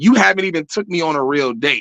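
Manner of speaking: ordinary talk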